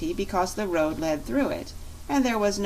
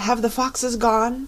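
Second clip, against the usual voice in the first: loud, quavering, trembling voice; 4 semitones higher, 5 dB louder than usual. A donkey peeking out of a door asks the newcomers, in a trembling voice. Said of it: "in a trembling voice".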